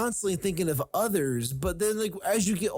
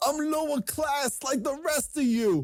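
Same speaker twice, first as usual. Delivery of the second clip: high-pitched put-on Brooklyn accent; 8 semitones higher than usual. Mocking a rich man who talks in his Brooklyn accent: put-on Brooklyn accent. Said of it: "he talks in his Brooklyn accent".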